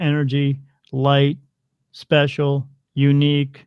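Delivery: level, flat, slow robotic machine voice. Retelling the words a lit-up gadget spoke, in a robotic computer voice. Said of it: "in that computer voice".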